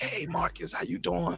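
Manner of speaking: put-on raspy female voice. Speaker imitates how girls with a permanent rasp greet Marcus, raspy voice. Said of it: "girls who got that permanent raspy voice".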